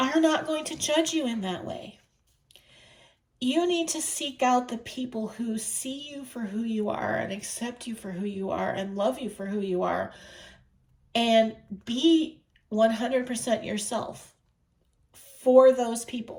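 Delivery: voice wet with tears, crying through the words. Giving advice to listeners, crying while talking. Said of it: "and I'm crying".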